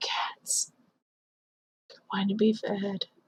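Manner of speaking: soft unvoiced whisper.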